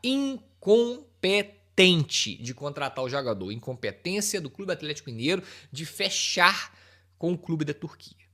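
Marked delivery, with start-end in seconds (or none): 0.0-2.4 very slow, deliberate, each word drawn out, raised voice. Repeating a criticism of the club signing the player, spoken very slowly. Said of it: "Falar bem devagar".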